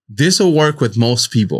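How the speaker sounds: normal talking voice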